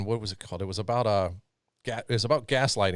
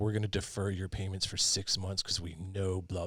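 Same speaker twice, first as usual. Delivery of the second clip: put-on soft corporate voice, quieter; 7 dB quieter than usual. Imitating a car company's announcement, in a soft Ford announcement voice. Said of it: "they've got this soft like voice".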